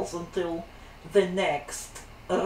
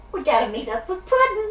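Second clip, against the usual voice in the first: playful villain voice, higher and louder; 11 semitones higher, 5 dB louder than usual. Voicing a navigation voice as Harley Quinn. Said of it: "Harley Quinn?".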